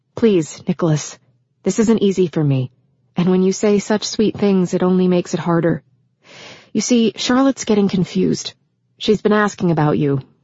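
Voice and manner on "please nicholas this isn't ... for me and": plain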